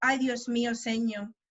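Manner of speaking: normal talking voice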